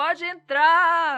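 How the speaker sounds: loud, slow, high bellowing yell, conductor style. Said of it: "ele gritava assim".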